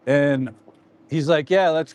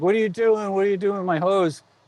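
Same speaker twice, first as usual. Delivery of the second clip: yelling, held back and restrained; 4 semitones higher than usual. Retelling a neighbor who finds his hose taken: imitating a neighbor yelling. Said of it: "he's yelling at me".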